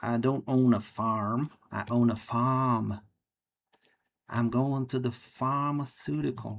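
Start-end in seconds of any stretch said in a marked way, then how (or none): 4.3-6.6 bad, silly, fake put-on British accent. Trying to speak British and sounding silly: bad put-on British accent. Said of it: "I can't speak British. I just sound silly".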